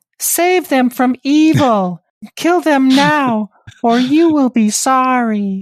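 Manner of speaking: weird, very high, loud puppet voice. Telling a horror story, voicing the man in the welding mask: weird voice. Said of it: "Is this a Sesame Street character".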